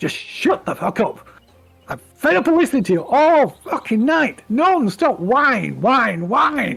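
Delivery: rough, gruff, fed-up, impatient voice, pitched high. Voicing a second figure answering the whiny one, in a gruff voice. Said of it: "this other gruff voice".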